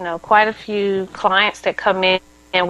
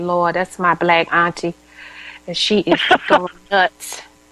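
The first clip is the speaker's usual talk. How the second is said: usual speaking voice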